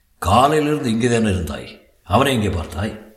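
plain

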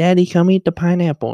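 put-on high, loud baby voice. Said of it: "talk in a baby voice".

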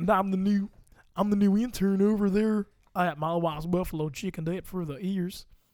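put-on, heavily laid-on Texas accent. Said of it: "That's a solid Texas accent".

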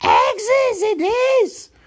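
very high-pitched, hissing creature voice. Gollum answers Bilbo's riddle, hissing. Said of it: "he hissed".

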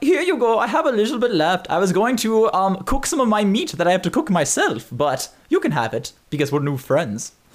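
high put-on German accent. Voicing Klaus the janitor answering a question, in a German accent. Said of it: "Like, his name's [name], and he works... He's a janitor here, ... Is this a German guy? I'm going to find the closest thing I can to stab him for that accent".

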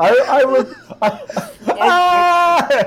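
very high, very slow, drawn-out stammered shout. Acting out a man being eaten by a dog in an improv scene: acted shout. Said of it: "and he shouts".

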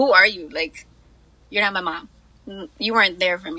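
angry delivery. Retelling what was once said to a mom while angry: imitating own past anger. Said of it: "I literally used to be like, look at her".

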